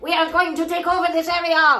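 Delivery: bad, high Parisian French accent. Speaker voicing gut colonies imagined as tiny Frenchmen, terrible Parisian accent. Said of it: "that was a terrible Parisian accent".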